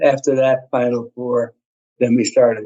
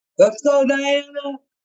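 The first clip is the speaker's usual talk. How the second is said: very high-pitched, loud holler; 14 semitones higher than usual. Asked how they'd be a little loud at a game, the speaker demos hollering. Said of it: "Just holler holler out".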